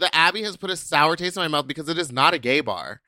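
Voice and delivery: ordinary talk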